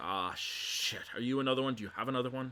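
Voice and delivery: exasperated goblin voice. Telling a game scene, voicing a goblin who comes out and looks at you: exasperated goblin. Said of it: "just sort of looks at you, exasperated".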